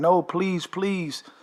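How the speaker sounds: put-on imploring, begging, pleading voice. Retelling a dream where the wife begs against a curse: imitating someone begging and pleading. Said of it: "the wife is begging and pleading".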